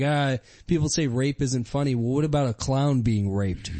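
ordinary talk

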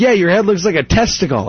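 ordinary delivery

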